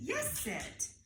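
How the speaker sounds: bright praising tone. Demonstrating how to praise after a sit command, in a praise tone. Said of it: "we have the praise tone".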